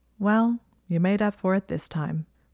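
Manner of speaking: ordinary talk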